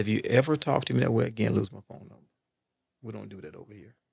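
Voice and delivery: composed, even delivery. Retelling what he told a woman who asked why he hung up, retelling it real calm. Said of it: "Real calm".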